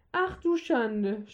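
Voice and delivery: dismayed groaning. Zwolgo reacts to news about the boss, groaning. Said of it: "stöhnte Zwolgo".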